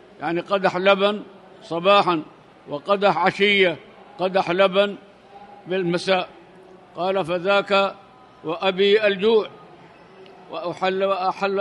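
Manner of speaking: normal talking voice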